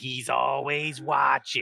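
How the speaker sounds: rough, creaky, slightly rasping slug lady voice. Retelling a game where he used a voice changer for a kid: Roz impression with rasp. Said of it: "I put a little rasp in my voice".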